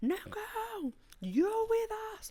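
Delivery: mock, very high, drawn-out, top-of-the-lungs holler. Retelling calling out to a cousin while drunk, re-enacting a top-of-lungs shout. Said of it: "at the top of my lungs".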